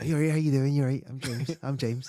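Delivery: put-on softly spoken voice. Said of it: "Very softly spoken".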